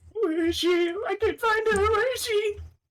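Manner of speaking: put-on tearful sobbing small-child voice. Playing a lost child in a game, sobbing like a small child. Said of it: "the sobbing and the crying of a small child".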